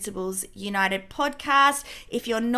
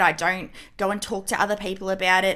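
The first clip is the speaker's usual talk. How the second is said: ordinary talk, nothing marked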